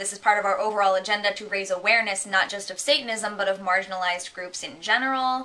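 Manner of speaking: ordinary talk, nothing marked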